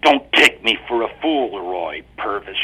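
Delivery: growled, growling voice. A narrator reads Patricia's reply to Roy Purvis, growled. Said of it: "she growled".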